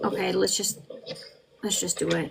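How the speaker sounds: grudging, reluctant, breathy near-whisper. Commenting on courtroom testimony, imitating a witness: imitating a reluctant witness. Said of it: "he's looking more reluctant now".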